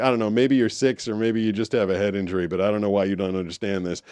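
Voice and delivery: ordinary talk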